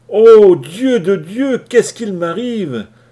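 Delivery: very high, very loud, shrill, drawn-out moan of pain. A rooster who has just burned his hand on a hot surface: moaning in pain. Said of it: "gémit le coq".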